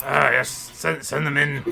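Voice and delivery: gruff-sounding. Voicing the man behind the door, answering the knock, in a gruff voice. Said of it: "there's a gruff voice from it".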